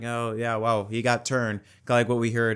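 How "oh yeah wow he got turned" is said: flat, monotone, completely level, no excitement. Mocking Clint Bowyer's reaction to a Daytona finish: flat monotone Clint Bowyer imitation. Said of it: "he sounds very like mm, like it just sounds like ... just very monotone".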